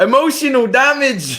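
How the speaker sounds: loud, slow delivery with laughter through it.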